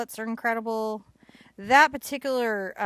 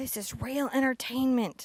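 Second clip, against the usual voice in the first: acted-out, put-on whisper; 4 semitones higher than usual. Retelling what they told their parents, in a re-enacted whisper.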